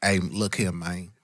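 put-on very low, soft, southern Memphis accent. Showing the others how the actor talks in the film, as Terrence Howard in Hustle and Flow, Memphis accent. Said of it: "that's that Memphis shit is what that is".

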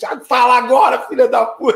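high, loud, slow gloating shout.

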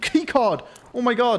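thrilled, high, drawn-out excited cry. Finding a labs keycard on a player scav he just killed: excited. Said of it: "Why are you so excited over that?".

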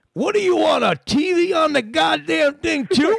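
high, slow, gruff, cranky caller voice.

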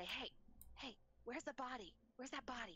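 hushed whisper, rattled off quickly. A player's character speaks to Jem on the side, whispering. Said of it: "I whisper".

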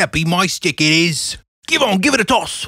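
put-on British accent, mock British voice. Joking around about animals, the speaker puts on a British accent. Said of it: "It was British".

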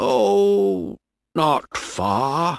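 unhurried, drawn out. Narrating a man answering a boy's question at sea: speaking slowly. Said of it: "he said slowly".

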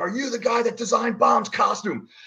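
play-acted, very high, in-your-face scream. Retelling how a wrestler got in his face backstage: imitating someone screaming. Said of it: "screaming at me".

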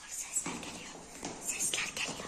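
soft, low, unvoiced, frightened whisper.

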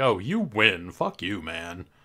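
smarmy, defeated talking-toy voice. Imitating a toy's spelling game that sounds defeated when you win: imitating a smarmy, defeated Speak and Spell. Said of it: "Like smarmy almost".

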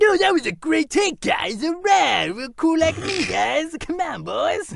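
very high, slow, drawn-out, drifting cartoon voice. Imitating Leo DiCaprio after hearing "and cut": Leo DiCaprio impression drifting into Cartman. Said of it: "this impression is turning slowly into Cartman".

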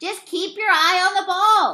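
high-pitched shouting. Yeager, standing ankle-deep in a puddle near second base, calls out; yelling. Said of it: "yelled Yeager".

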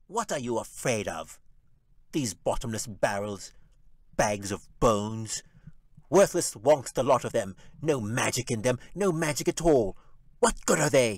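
contemptuous, growling, snarling goblin rant. Narrator reading a fantasy tale, the goblin addresses imps and urchins: snarling goblin voice. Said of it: "The goblin snarled".

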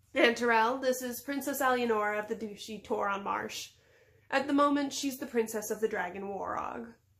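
ordinary delivery

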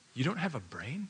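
soft, most worried, deeply concerned caring tone. Retelling what a man asked someone after closing the door, in a concerned voice. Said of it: "in the most concerned voice".

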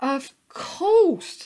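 very loud, high, laughing through words. Willie replies to the sheep after her answer, laughing. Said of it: "laughed Willie".

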